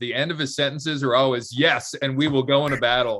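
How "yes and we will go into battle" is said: bold, settled tone with statement-final falling intonation. Imitating how Rob ends sentences after returning from the U S: imitating Rob's declarative tone. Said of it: "he is very declarative".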